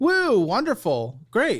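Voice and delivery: fake enthusiasm, dripping sarcasm, swooping tone. Reacting to another speaker's finances with a remark: sarcastic praise. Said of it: "I was being sarcastic".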